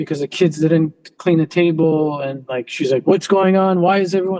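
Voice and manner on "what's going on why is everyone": usual speaking voice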